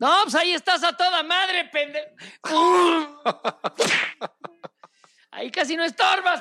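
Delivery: mock sarcastic shouted jab, high-pitched.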